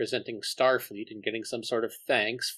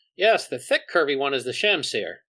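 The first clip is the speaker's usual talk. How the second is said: loud, knowing sarcasm with swooping pitch; 2 semitones higher, 6 dB louder than usual. Narrating a scene, voicing Kara's reply: sarcastic. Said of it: "sarcastically says".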